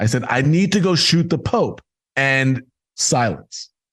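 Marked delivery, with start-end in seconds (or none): 0.3-1.8 shouting in a high voice. Retelling yelling back at the man who raised his voice: retelling a yell. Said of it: "And I just yelled".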